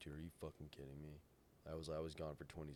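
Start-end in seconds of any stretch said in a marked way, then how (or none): 0.0-1.2 put-on anger, quieter. Speaker retells arguing with the man who booted his car; retelling an angry reply. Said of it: "I genuinely like I was so mad".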